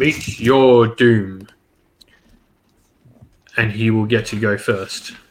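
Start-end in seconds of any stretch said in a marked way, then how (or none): 0.0-1.5 thundering, booming, proclaiming villain-like voice. A game master voicing a figure who sends out its greatest champion, booming voice. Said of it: "you hear the booming voice".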